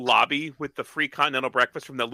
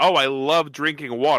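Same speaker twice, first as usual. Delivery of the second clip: normal talking voice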